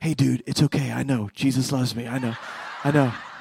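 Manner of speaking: low, hushed, close half-whisper. Retelling how the devil actor half-whispered in the son's ear: retelling a half-whisper. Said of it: "whispered in his ear".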